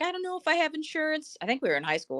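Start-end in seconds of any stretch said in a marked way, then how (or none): 0.0-1.4 high, tearful, upset crying voice. Retelling a friend's words after a car accident: imitating a friend crying. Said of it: "she's, like, crying".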